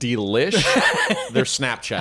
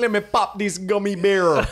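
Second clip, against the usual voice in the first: pitched-up, stoned-sounding stoner voice; 7 semitones higher than usual. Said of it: "that's my impression of you in Jamaica".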